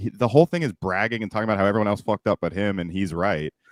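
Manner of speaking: ordinary talk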